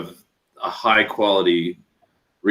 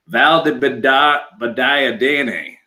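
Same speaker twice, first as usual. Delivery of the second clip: put-on, very slow, high-pitched good-ol'-boy drawl; 5 semitones higher than usual. Explaining how hard a prosecco name is to say, the speaker demonstrates it in good old boy accent. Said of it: "as just a good old boy".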